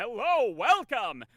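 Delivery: pinched, squished, very high, showy showman voice. Speaker demonstrating voice techniques, greeting in a squished, energetic voice. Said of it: "squishing the voice".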